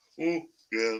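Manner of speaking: plain, normal everyday speaking voice. Showing how they supposedly sound when mimicked: imitating own voice as mimicked. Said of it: "That's how I sound".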